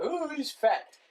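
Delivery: high-pitched mocking voice. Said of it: "you can make the joke".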